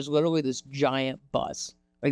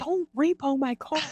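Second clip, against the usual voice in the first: mock very high-pitched sobbing, crying yell; 12 semitones higher than usual. Retelling a dream where the car gets repossessed, retelling a crying yell. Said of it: "I started screaming and I'm like crying and I'm like yelling".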